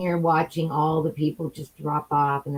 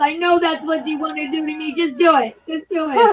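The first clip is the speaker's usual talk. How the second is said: put-on crying voice, higher and louder; 12 semitones higher, 5 dB louder than usual. Retelling what a woman said while crying to the cops: imitating someone crying. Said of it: "she's crying to the cops".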